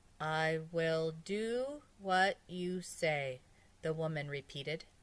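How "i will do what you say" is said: low voice from deep inside, deep. Narrator reads a woman repeating a doctor's words, in a low voice from deep inside. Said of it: "in a low voice from deep inside her".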